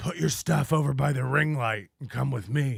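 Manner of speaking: soft, hushed half-whisper. Acting out Chad bringing a woman home, retelling a half-whisper. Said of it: "he just whispers to you".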